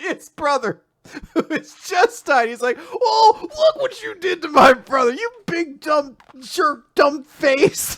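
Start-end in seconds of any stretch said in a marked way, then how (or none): 2.8-8.0 high, goofy, play-acted wacky comedy voice. Mocking how a character reacts to his brother's death: mock wacky comedy tone. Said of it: "having this wacky comedy moment".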